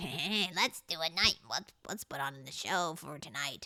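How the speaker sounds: horrifying put-on monster voice. Describing OCD dreams, speaker voices the OCD monster in their head, horrifying monster voice. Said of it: "That was actually a horrifying voice".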